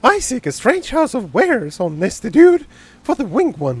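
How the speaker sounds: high, squeaky, crazy cartoon voice, swooping all over. Voicing the character given the crazy voice, weird altered Mickey Mouse voice. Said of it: "the very weird alteration of Mickey Mouse voice is what I consider to be the crazy voice".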